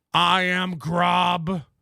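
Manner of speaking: sci-fi movie alien voice, drawn out. Reading a viewer's name and asking if it sounds alien, movie alien voice. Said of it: "Does that sound like an alien in some movie?".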